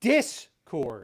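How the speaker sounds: Discord with stress on first syllable Dis. Correcting another speaker's pronunciation: stress on dis in discord. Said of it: "the stress is on the first syllable".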